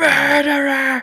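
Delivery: piercing, very high, very loud shrieking yell. Imitating the man in the clip yelling at Bill Gates: imitating a man yelling murderer. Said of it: "He's just like".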